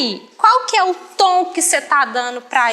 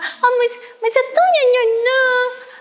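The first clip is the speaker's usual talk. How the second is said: mock pity, very high squealing coo. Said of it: "traz um tom de caridade".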